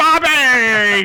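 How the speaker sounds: high-pitched, drawn-out, stretched-out shout. Repeating the shouted name to ask about the movie: De Niro shout. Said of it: "I sound like De Niro now".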